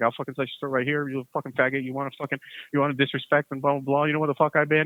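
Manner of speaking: put-on furious, angry outburst. Retelling threatening a classmate with a knife: imitating own furious threat. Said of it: "I was going off".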